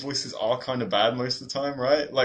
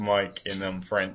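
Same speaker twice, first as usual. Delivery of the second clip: plain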